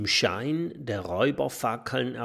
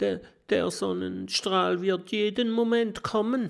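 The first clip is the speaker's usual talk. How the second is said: high, quivering, trembling, fearful voice; 9 semitones higher than usual. A narrator reads the professor answering an angry robber, in a trembling voice. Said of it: "mit zittriger Stimme".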